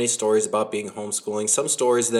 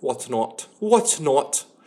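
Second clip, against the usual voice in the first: put-on British accent, slow, words drawn out; 3 semitones higher than usual. Speaker repeating a word, joking that today they are british, british accent. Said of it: "I'm British".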